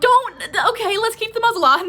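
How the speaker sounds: high, loud, alarmed pleading blurt.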